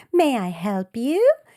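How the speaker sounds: attempted Minnesota accent. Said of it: "I'm trying to do Minnesota".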